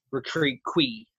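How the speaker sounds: riquiqui with pitch rising on the last syllable. Inflection should follow the shape of the accent mark: rising pitch on last syllable of riquiqui. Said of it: "like going up with the accent".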